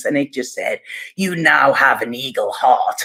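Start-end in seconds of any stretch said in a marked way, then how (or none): 1.2-3.0 booming giant voice, lower. Retelling a voice heard during an experience, in a booming giant's voice. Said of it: "it was like booming".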